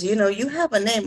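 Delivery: normal talking voice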